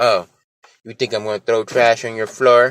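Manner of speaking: ordinary talk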